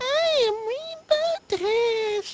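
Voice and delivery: over-the-top feminine voice, very high, loud, slow, drawn out. Telling about voicing a character for a fanfic, doing the Rainbow Dash feminine voice. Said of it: "bring out my ball-bustingly feminine voice".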